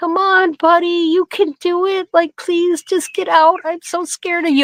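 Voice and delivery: coaxing put-on calm. Retelling coaxing a water buffalo out of the car: imitating talking calmly. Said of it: "talk calm so he doesn't sense my fear".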